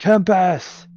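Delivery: loud, high, roaring, bellowing war cry. Voicing a raging barbarian calling to the god of war: bellowing war cry. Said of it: "run over here and yell".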